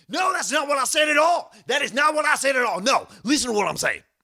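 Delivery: very high, loud, worked-up agitated voice. Doing a requested impression that gets really upset and mad: Alex Jones impression. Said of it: "about Alex Jones".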